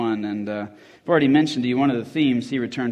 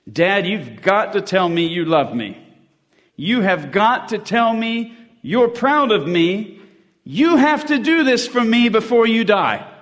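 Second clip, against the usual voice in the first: very high, rising, pitiful, piteous screaming; 9 semitones higher, 5 dB louder than usual. Narrator reads his sister Carol screaming at their dying dad, ancient, piteous scream. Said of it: "screaming at Dad in an ancient, piteous voice".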